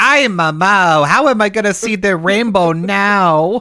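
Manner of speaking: put-on high Spanish accent, "now" stretched. Describing how Rosita talks, mixing English with Spanish, in Rosita's accent. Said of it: "she has the accent and she's like".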